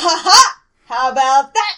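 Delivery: booming, very loud, triumphant gloating at full volume. Answering the game master after downing a foe: Lamb's gloating victory taunt. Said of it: "what do you say when he goes down?".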